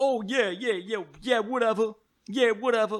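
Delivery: put-on Brooklyn accent. Complaining that a film's cast uses the wrong accent, in a put-on Brooklyn accent. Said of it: "using like a fucking Brooklyn accent".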